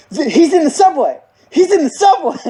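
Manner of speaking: high, frantic, alarmed blurt.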